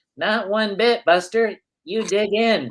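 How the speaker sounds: put-on high gee-whiz boy scout voice. Retelling asking for a donut at lunch, the speaker quotes him in David Lynch Boy Scout voice. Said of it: "in his kind of David Lynch Boy Scout voice".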